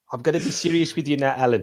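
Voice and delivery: put-on South African accent. Quoting a tv comedy scene, the speaker voices a south african man: south african accent. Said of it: "I sounded like that guy".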